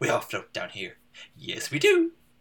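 playful clown lilt, swinging up and down. Retelling a favorite movie line in Pennywise voice. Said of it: "his delivery in that, too, is like".

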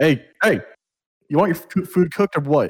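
irritated, fed-up, pissed-off voice, pitched high. Retelling how the cook snapped at a couple: imitating an angry cook. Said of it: "he's always fucking pissed off".

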